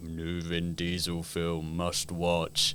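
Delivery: very slow, soft, vacant, brainless-sounding delivery. Mocking brainless fans who see every new film: Vin Diesel impression. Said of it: "is that your Vin Diesel impression?".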